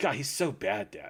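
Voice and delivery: muttered under the breath. Retelling how a daughter reacted to a character: imitating someone muttering under her breath. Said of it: "just talking under her breath".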